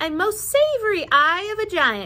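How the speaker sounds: plain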